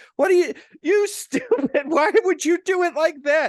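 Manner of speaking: play-acted, very loud, very high, shrill, exasperated yelling. Parent retelling a remodeling weekend with the teenagers: retelling yelling at teenagers. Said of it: "just yelling at my idiot teenagers".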